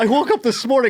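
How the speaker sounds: very high, panic-stricken, frantic blurt. Recounting what a man said, the speaker imitates his panicked speech. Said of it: "the most panicked I've ever heard".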